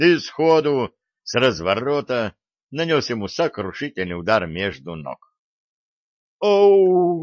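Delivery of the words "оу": high, drawn-out groan. A man struck in a fight doubles over: groaning. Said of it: "простонал мужик".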